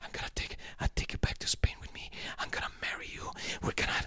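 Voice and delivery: acted-out whisper. Describing an intense movie scene, acting out a crying man's whisper. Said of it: "he's whispering".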